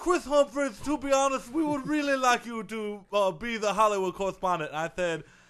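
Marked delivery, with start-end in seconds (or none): 0.0-4.7 stiff, corporate, network-executive voice. Retelling a phone call from the suits: impression of the suits. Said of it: "I'll do my impression of them".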